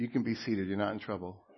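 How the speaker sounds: playful, teasing, joking tone. Speaking to the church, telling someone they can be seated: teasing. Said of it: "Just teasing you".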